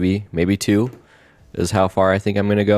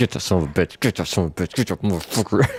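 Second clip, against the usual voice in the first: muttering quietly under breath. Retelling how their dad reacted while watching football, muttered under his breath. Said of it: "he would always under his breath be like".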